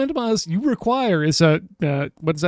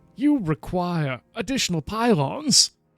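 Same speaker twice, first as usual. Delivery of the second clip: put-on game announcer voice. Asking for someone as a StarCraft voice, then doing it: StarCraft advisor voice. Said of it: "Can I get this guy as a StarCraft voice?".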